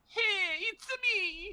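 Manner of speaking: heavy put-on Italian accent. Showing how the voice sounds in their head: Roberto Benigni Italian accent. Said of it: "That's how I make Roberto Benigni in my head".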